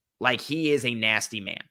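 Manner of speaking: ordinary talk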